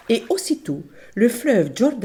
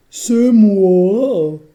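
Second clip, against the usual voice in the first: big ogress voice, much louder; 7 dB louder than usual. Narrating a fairy tale, the ogress answers the grandmother's question, in her big voice. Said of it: "dit l'ogresse de sa grosse voix".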